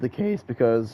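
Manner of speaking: cracking, breaking voice mid-sentence. A YouTuber gives viewers an update about another channel; voice cracks. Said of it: "nice voice crack there".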